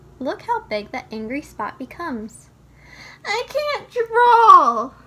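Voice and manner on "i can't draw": frustrated yell, slow, very loud and high. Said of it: "when you feel like yelling".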